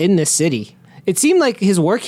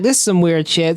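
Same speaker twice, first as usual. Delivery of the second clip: ordinary talk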